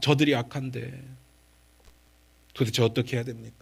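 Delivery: low, soft, weary sighing lament. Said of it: "이러면서 한숨을 쉬게 되는 거예요".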